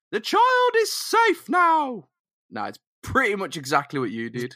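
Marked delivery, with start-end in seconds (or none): 0.1-2.0 very high, slow, drawn-out alien queen voice. Told it's their turn, the speaker gets in character for an alien queen impression. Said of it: "trying to impersonate an alien queen".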